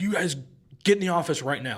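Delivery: acted-out stern, high-pitched, angry barking yell. Retelling a school fight story, the principal ordering the kids: imitating a principal yelling. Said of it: "he's yelling at us".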